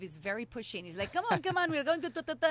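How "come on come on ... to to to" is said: put-on speaking with Israeli accent. Retelling how a pushy guy urged her to the movie: imitating an Israeli accent. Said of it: "he had, like, this accent".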